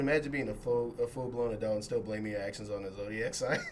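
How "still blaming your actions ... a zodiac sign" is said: ordinary talk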